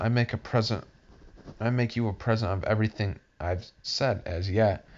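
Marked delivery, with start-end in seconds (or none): none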